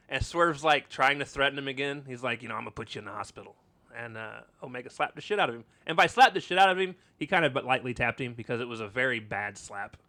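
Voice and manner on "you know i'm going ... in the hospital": tough, threatening tough-guy voice. Retelling how Swerve threatened Omega: Mister T voice. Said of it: "making Swerve sound like Mister T".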